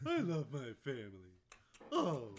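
very loud, swooping put-on dog voice. Retelling how a friend wished he were a dog, joining in with the dog voice. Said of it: "doing the dog voice".

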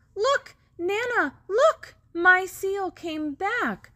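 crying out, very high. In a story read aloud, the child calls to the woman he is with, crying out. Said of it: "Noah cries".

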